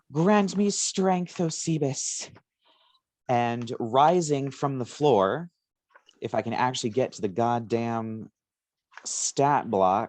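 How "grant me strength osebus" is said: full-throated, high, yelled cry. A character raises her arms and yells. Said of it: "she raises her arms and she just yells".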